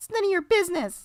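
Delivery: put-on very high bratty kid voice.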